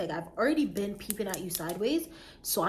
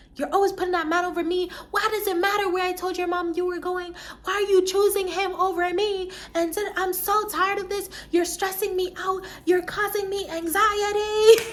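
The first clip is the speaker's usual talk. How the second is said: mock, very high, furious raging rant; 10 semitones higher, 4 dB louder than usual. Recounting a phone argument and acting out her side: retelling a furious rant. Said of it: "Literally turning into the Hulk at this point".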